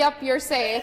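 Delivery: plain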